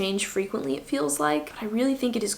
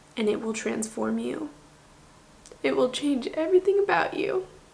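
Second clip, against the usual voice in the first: tearful, crying voice breaking through the words; 3 semitones higher than usual. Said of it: "I don't know why I'm crying".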